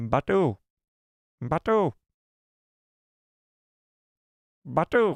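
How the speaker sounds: put-on creature character voice. Showing the listener his Grogu impression, Grogu voice. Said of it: "This is Grogu right here".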